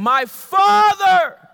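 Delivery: very loud, high-pitched outcry. A speaker retells someone crying out in prayer in a prayer meeting, retelling a raised-voice cry. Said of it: "so I know that his voice was raised".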